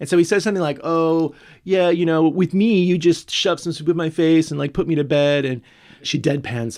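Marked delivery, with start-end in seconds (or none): 0.8-5.4 put-on camp drunk voice, higher and louder. Retelling a drunk character's line to another speaker: imitating Earl's camp drunk voice. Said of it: "He is just camp as a row of tents here".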